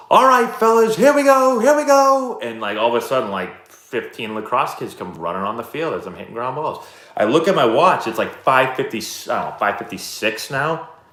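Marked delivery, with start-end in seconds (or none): 0.1-2.4 shrill, high, loud yell. Retelling what a lacrosse coach yelled to his players, imitating a coach yelling. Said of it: "he yells".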